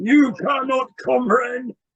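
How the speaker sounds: booming robotic voice. Retelling a dream where a UFO answered, in a booming robotic voice. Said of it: "big, booming, robotic voice came out saying".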